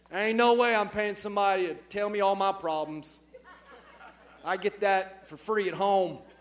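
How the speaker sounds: put-on, laid-on deep Southern accent. A speaker voices what men in the room might say, in a deep Southern Coweta County accent. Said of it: "in some like deep southern Coweta County accent".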